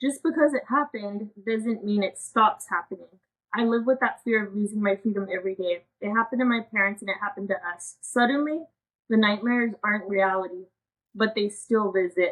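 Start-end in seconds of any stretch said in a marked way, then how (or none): 8.0-12.3 voice fighting off tears, swallowing them mid-line. Sharing a personal story, trying not to cry. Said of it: "sorry, I'm trying not to cry".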